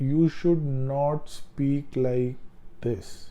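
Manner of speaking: very slow, drawn-out, overly slow delivery.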